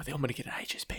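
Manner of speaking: put-on whispering. Retelling how the other speaker mentioned buying food: imitating someone whispering. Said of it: "You whispered in my fucking ear".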